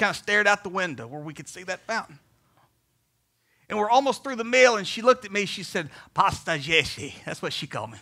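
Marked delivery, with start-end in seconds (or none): 6.1-7.1 put-on Kenyan-accented speech. Retelling what Pamela said to you at dinner; imitating Pamela's Kenyan accent. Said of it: "I'll stop my Kenyan accent right there".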